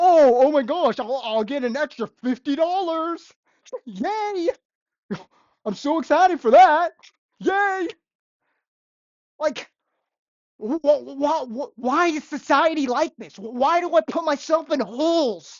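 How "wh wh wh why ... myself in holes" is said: frustrated, mad, getting worked up, stammering. Talking about quitting a restaurant job, the speaker is getting mad. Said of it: "I'm getting mad".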